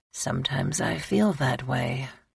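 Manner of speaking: hushed, almost whispered, barely above a whisper. Narrator reading the man's answer to the woman's remark, barely above a whisper. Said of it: "The words were hardly above a whisper".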